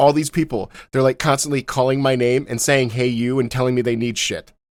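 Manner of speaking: ordinary talk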